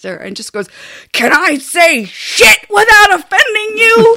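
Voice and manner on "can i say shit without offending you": blustering, very loud, shrill rising yell. Retelling a man slamming the table and leaning in: imitating someone yelling. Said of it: "as he was yelling this".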